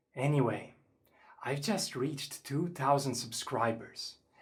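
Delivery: whispering. Teaching a noise-activated effect on video, the host keeps whispering. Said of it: "I still have to whisper".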